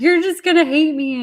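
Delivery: loud, high bawling wail, sobbing through the words. Retelling a phone call to a best friend, imitating own past crying. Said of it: "I'm just bawling my face off".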